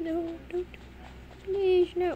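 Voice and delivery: mock frightened, high, scared begging. Retelling your reaction when he seemed to be coming for you: acting out scared pleading. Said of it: "he scared me".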